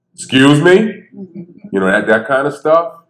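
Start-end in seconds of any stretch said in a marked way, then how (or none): 0.2-1.0 pitched-up, cutting police-officer voice. Speaker demonstrating the voice that makes everybody jump, sounding like a cop. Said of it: "And I sound like a cop".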